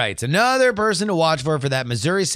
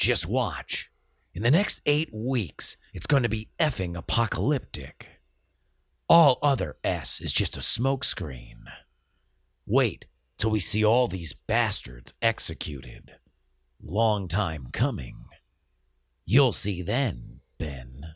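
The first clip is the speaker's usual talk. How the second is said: deep, very low reading voice; 8 semitones lower, 6 dB quieter than usual. Rereading a listener's quote for a fan who asked: Dan Carlin quote voice. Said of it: "I'll read it again in the Dan Carlin quote voice".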